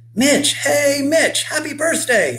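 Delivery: very high, cheerful, cheering call. Billy arrives on his bike with a card for mitch, cheering. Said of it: "Billy cheered".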